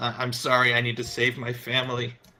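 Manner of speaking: sobbing, tearful crying voice. Game narrator voicing a character who steps forward with a knife, crying. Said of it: "he's crying".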